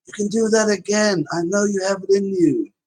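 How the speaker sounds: high-pitched encouraging voice. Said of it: "here comes Connor's rally".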